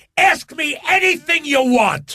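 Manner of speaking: high, slow shout while laughing. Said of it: "and he goes".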